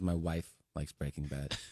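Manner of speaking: crestfallen, disappointed, let-down tone. Retelling a conversation on a plane: imitating a disappointed tone. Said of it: "He was disappointed".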